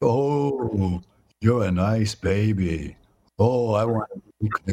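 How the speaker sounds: creepy, frightening, slow, drawn-out voice. Describing a study's scary recording, imitating it in a scary voice. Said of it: "Really a scary voice".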